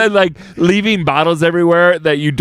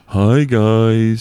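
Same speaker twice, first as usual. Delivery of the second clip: put-on forlorn character voice; 5 semitones lower than usual. Showing the others how Snuffleupagus should sound, greet them in a forlorn Eeyore-like voice. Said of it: "A little bit more Eeyore".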